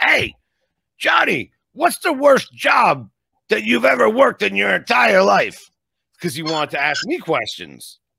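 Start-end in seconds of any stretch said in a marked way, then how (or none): 0.0-5.7 pitched way up, rough and creaky. Retelling an interview guest's question to him: Steve Schirripa voice. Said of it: "So he's got this voice, and I have to do it like him".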